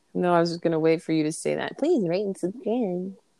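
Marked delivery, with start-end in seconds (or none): 1.8-3.2 goofy, silly put-on dumb voice. Mocking the other speaker's podcast sign-off: imitating a dumb voice. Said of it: "That dumb fucking voice you used".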